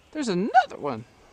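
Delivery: voice breaking and cracking, very high. Filming deer on a course and spotting another one: voice cracking. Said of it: "Why did my voice crack?".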